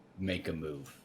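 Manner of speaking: low, menacing, threatening tone. A player stands over a struggling, unarmored enemy and speaks, menacing. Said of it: "kind of say menacingly".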